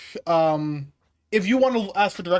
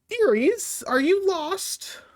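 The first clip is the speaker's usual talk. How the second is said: put-on very slow, very high old gnomish woman voice; 10 semitones higher than usual. Narrating a tabletop scene, an old gnome woman hobbles up to the party, old gnomish woman voice. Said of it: "old gnomish woman, hobbles up to you".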